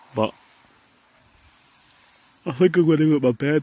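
words stretched out, spoken through a yawn. Sitting outside at night looking at the stars: yawning. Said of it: "I'm yawning".

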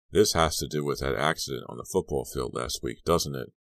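usual speaking voice

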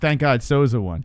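normal talking voice

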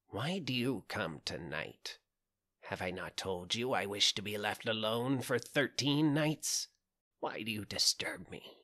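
put-on croaky, croaking old witch voice. Narrating a fairy tale, the witch answers the princess through the door, croaking voice. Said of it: "a croaking voice from within called".

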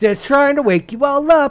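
very high, loud, cheerful yelling.

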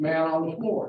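plain

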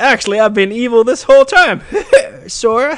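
bad, very high, loud squeaky mouse voice. Imagining Mickey as the final boss in Kingdom Hearts 3, doing a bad Mickey voice. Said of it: "I can't do a Mickey voice".

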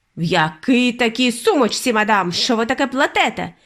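indignant, offended, outraged tone. Mr. Jenkins answers the grandmother's reply about her handbag, indignant. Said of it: "обурився містер Дженкінс".

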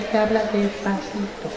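soft, sweet little character voice.

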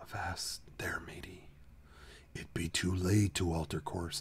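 breathed-out whisper. Describing a ride's talking skull in the dark: Pirate Skull whisper. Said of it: "a skull in the dark whispers to you".

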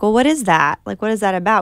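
ordinary talk, nothing marked

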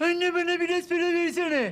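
mocking imitation. A mother mimics her son right back at him, in a mocking imitation of her son. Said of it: "İnsan evladının taklidini yapar mı?".

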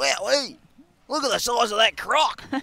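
speaking in Australian accent. Asked during casting to pretend to be Steve Irwin: Steve Irwin impression. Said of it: "can you pretend to be like Steve Irwin".

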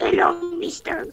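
very high, soft goblin voice. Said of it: "Don't give her a goblin voice".

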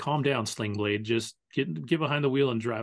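plain

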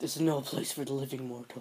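put-on ghostly, spooky knight voice. Making up a voice for a character's line, Spectre Knight voice. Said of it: "let me think of a voice for Spectre Knight".

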